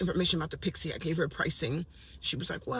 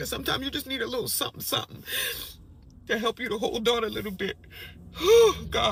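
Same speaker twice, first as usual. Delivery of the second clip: sobbing, ugly crying while speaking, higher and louder; 5 semitones higher, 6 dB louder than usual. Telling a personal story and apologizing for the tears, ugly crying while talking. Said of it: "I know I'm ugly crying".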